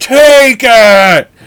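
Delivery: piercing, very loud and high shrill yell. Describing a film scene where one character confronts another: imitating McKellen yelling. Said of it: "he keeps yelling at him".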